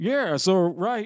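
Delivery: Texan tour guide voice. Imitating a tour guide at the tunnels: Texan redneck voice. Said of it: "I'm talking like a, like a Texan redneck".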